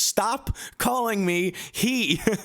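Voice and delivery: very high, slow, drawn-out, exasperated voice. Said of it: "He's like".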